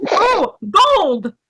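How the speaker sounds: shrill, very high scream at full lungs. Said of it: "I'm screaming it as loud as I can".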